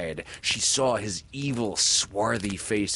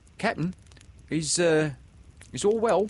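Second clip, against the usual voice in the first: timid, much higher pitch; 8 semitones higher than usual. The crew addresses their melancholy captain, timid question. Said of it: "they asked timidly".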